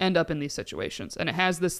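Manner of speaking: ordinary delivery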